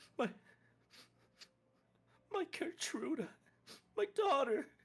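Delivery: broken, very high-pitched words between sobs. Voicing a woman asked what happened to her, talking between sobs. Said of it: "Between sobs, she's just like".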